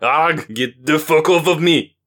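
loud, high-pitched, wild roaring bellow. A much larger man spins wildly to throw off the woman clinging to him, bellowing.

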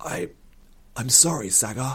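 croaking, forced-out, strained words. Ryn, a blade at his throat, speaks to Sagar, croaking. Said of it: "Ryn croaked".

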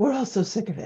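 put-on English with an elegant, beautiful French accent. Quoting an agent's remark in her French accent: imitating agent's French accent. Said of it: "in her beautiful French accent".

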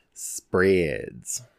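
low, suggestive, dirty-sounding delivery.

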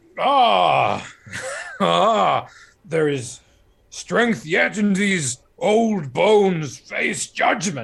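very loud, very slow, booming proclamation-style delivery. Voicing a sentient sword as it takes over a character: Brian Blessed voice. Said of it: "It talks like Brian Blessed".

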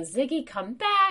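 loud, very high-pitched shouted call. Retelling calling the dog back out of the river, retelling a yell. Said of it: "And then I'm like yelling".

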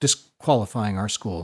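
plain

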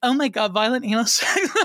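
high, put-on Valley Girl way of talking. Imitating a woman people confuse with the other speaker: Valley Girl voice. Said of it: "she's got the Valley Girl thing going on".

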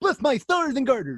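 very high, loud, goofy cartoon voice. After the others praise his Bullwinkle, the speaker does it again: Bullwinkle voice. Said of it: "It's super good".

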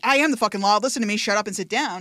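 acted stern, authoritarian tone of voice. Showing how a character would not say a line: imitating authoritarian delivery. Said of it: "her being an authoritarian".

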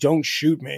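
imitated crying, panicked pleading tone. Retelling a man's words to a cop: imitating someone crying in panic. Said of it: "crying and saying".

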